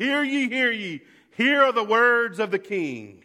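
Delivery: loud, high town-crier yell with ye drawn out. Speaker describes a king's messenger in the town square, retelling a town crier's yell. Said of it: "he would yell as loud as he could".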